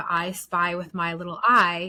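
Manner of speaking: normal talking voice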